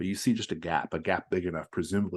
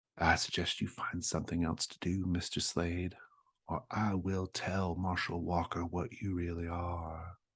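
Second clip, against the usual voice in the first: soft half-whisper, close to the ear; 3 dB quieter than usual. Voicing a possessed character speaking into another's ear: half-whispering. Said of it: "she whispers in your ear".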